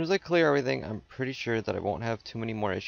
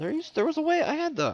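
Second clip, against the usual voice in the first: squeaky, very high-pitched, voice jumping suddenly high; 4 dB louder than usual. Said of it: "my voice went all high-pitched".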